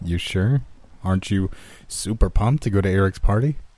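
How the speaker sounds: ordinary delivery, nothing marked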